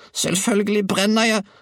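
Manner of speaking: shrill, very high, bawling yell. Narrator reading the grandmother's reply to Georg, bawling. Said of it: "vrælte hun".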